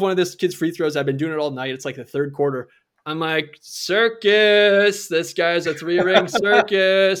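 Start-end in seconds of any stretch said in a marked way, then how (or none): 3.6-7.2 mock, very slow, loud, drawn-out heckling yell. Retelling heckling a high school basketball player: imitating screaming a heckle. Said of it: "In the middle of me screaming".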